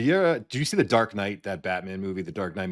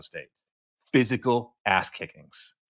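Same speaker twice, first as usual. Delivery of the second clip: ordinary delivery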